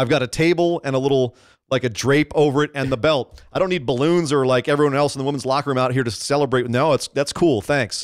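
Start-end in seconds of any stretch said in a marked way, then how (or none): none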